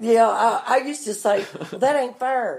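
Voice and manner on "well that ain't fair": put-on Southern accent, vowel in fair flattened to far. Retelling what they used to say as a child: retelling own words in southern accent. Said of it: "And I was saying far".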